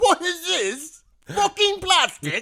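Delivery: high, loud, slow outraged rich man squeal. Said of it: "He's like".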